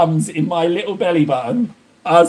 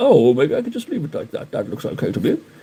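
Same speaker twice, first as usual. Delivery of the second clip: wry, put-on self-teasing tone; 3 semitones lower than usual. Scolding oneself while inking, imitating own past excuse: imitating own past words. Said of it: "and you're like".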